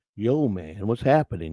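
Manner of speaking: soft, easygoing, laid-back groovy dude voice. Describing what he expected a caller to sound like: laid-back sixties guy voice. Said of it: "kinda like a sixties guy, laid back a little bit with the groovy man".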